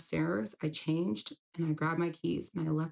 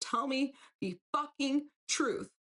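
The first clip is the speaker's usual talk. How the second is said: acted-out, high-pitched screaming; 9 semitones higher than usual. Retelling confronting a man about his gambling, re-enacting a scream. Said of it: "I scream in his face".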